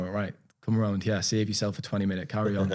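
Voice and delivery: ordinary talk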